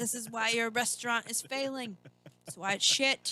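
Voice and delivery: high, very loud, berating yell. Retelling a little pint-sized Gordon Ramsay's rant, mock Gordon Ramsay-style yelling. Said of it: "he's like yelling at".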